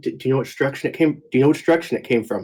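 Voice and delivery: careful, guarded, discreet, words repeated. Speaking in character to Vanguard, shield and hammer up: saying quietly. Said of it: "try to quietly say to Vanguard".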